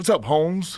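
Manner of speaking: high, easygoing, slangy, casual tone. Retelling how an uncle who was a prison warden greets people: imitating uncle's way of talking. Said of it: "So now he talks like that".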